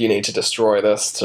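ordinary talk

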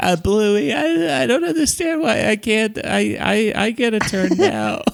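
very high, slow, stuffy-nosed voice. Imitating Bingo from the show, who always sounds stuffy-nosed: imitating Bingo's stuffy-nosed voice. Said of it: "Bingo always sounds like she has a cold".

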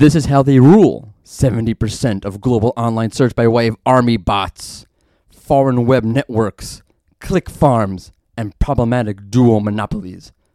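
mock reading-aloud voice. Reading a viewer's comment aloud on the show's question: put-on reading voice. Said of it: "again, my reading voice".

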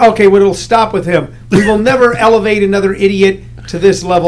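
plain

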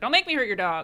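plain

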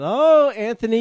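high sing-song.

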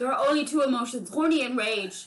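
put-on loud, terrible German accent. Acting out Wolfgang's dad lecturing his son: terrible German accent as Wolfgang's dad. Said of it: "your terrible German accent".

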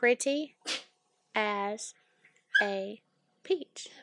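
every word stretched, very slow and drawn out. Saying the southern phrase again when asked: slow drawn-out delivery. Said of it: "I can't say it any quicker".

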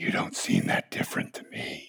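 hushed, needling, taunting whisper. In a sermon, acting out a distracting voice that doubts a believer: voice of doubt. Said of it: "You hear that voice?".

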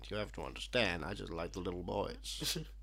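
hushed, murmured Southern drawl. Joking about endless hours of Kevin Spacey talking at you, do Kevin Spacey in a southern accent. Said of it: "In a southern accent".

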